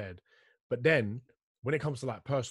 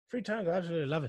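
bad, put-on, high-pitched Irish accent; 6 semitones higher than usual. Imitating a friend who rereads books, in a bad Irish accent. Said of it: "that was a shit Irish accent".

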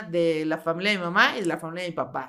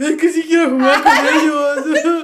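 mock very loud, slow crying whine, ellos stretched; 8 semitones higher, 12 dB louder than usual. Retelling complaining to the mother all week: imitating own past crying. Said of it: "lloré toda la semana con mi mamá así de".

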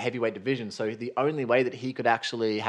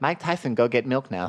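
put-on high lisping voice. Trying again after describing his high voice and lisp: Mike Tyson impression. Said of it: "That was actually a pretty decent Mike Tyson".

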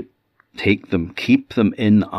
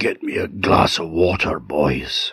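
faint, weak, feeble voice, slow pace; 3 semitones lower than usual. Telling a story, voicing an injured teacher asking boys for water: weak voice. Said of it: "in a weak voice he said".

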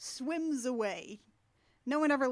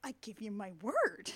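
put-on offended voice, lower pitch; 3 semitones lower than usual. Retelling a movie scene, the speaker quotes the dragon as a mock-offended Sean Connery. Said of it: "Sean Connery just sounds so, like, offended".

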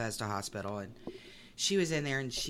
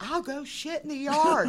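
very high, very loud, shrill screaming; 8 dB louder than usual. Recalling a woman who was screaming at the speaker, retelling someone screaming. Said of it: "she's screaming at me".

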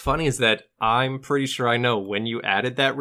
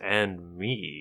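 put-on sinister voice, lower and quieter; 6 semitones lower, 7 dB quieter than usual. Retelling a Muppets movie scene where Charles Grodin turns to the camera, in a sinister voice. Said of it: "In a sinister voice".

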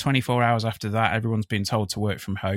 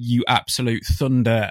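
plain

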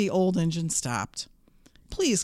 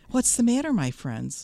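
kind, friendly, gentle tone; 3 semitones higher than usual. The little blue engine stops and asks the dolls and toys, kindly. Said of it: "she asked kindly".

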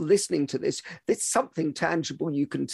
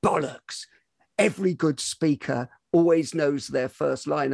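usual speaking voice

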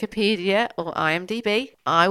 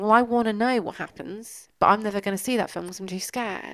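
ordinary delivery

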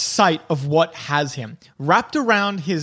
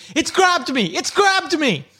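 very high, frantic, panicked screaming; 11 semitones higher than usual. Game master voicing a panicking character to the players, panicked scream. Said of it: "he screams at you".

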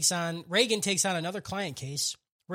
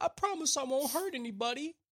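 put-on tearful pleading voice, higher and quieter; 7 semitones higher, 5 dB quieter than usual. Recapping a scene where Dimple starts to cry: imitating Dimple crying. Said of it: "But then Dimple starts to cry".

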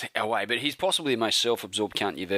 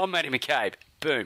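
boastful, self-important tone, pitched higher; 5 semitones higher than usual. Retelling how a self-absorbed man introduces himself: imitating Matty McCabe, self-important. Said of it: "That's how I imagine Matty McCabe introducing himself".

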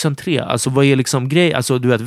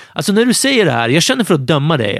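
ordinary talk

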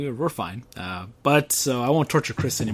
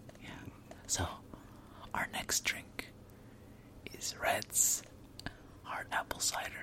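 creepy, very hushed close-mic whisper; 15 dB quieter than usual. Introducing the next drink: creepy voice. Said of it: "enough of the creepy voice".

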